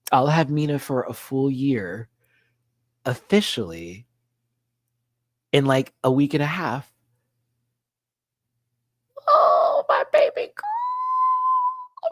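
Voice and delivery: getting emotional. Talking about an upcoming adoption anniversary, getting emotional. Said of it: "I'm getting emotional".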